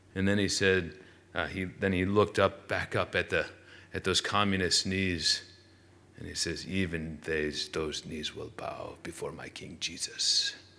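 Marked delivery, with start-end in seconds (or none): 6.7-10.6 put-on Dutch accent, unconvincing, badly done. Quoting a man who looked up at communist soldiers' knees: attempted dutch accent. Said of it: "I wanted to practice a Dutch accent".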